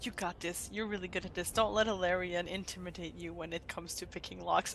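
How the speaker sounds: very quiet, barely audible half-whisper. A tabletop player's character encourages a companion before lockpicking: half-whispering. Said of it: "I will whisper to Tantan".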